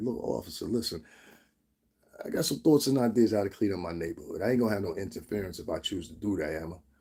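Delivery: very calm, even speech. Showing how to speak to a police officer: speaking very calmly. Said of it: "Speak very calmly".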